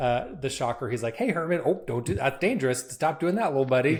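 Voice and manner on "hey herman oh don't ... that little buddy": mock patronizing, babying, as if to a little kid. Showing how Spider-Man treats the Shocker: Spider-Man talking down as to a kid. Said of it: "that's how Spider-Man treats".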